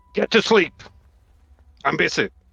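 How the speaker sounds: rough, raspy, creaky ship captain voice. A player answers as if he were the captain, to trick someone, impersonating the captain. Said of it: "try to sound like the captain".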